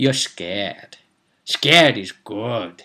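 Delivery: acted, gleeful, relishing gloat with malign glee. Describing his reaction to someone panicking at him, voicing his thought: mock malign glee. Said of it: "with quite malign glee".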